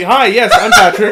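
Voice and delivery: put-on very loud, eager-to-please, super friendly voice. Retelling greeting an Uber driver at pickup: imitating own super friendly tone. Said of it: "I'm trying to be super friendly".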